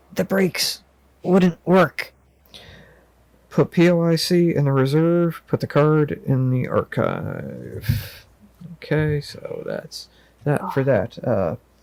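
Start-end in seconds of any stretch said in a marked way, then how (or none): 0.2-2.1 frail, rasping, hoarse, weak, pitched-up voice. Reading a game scene, a driver who just regained consciousness speaks in a hoarse, weak whisper. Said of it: "the driver whispers in a hoarse, weak voice".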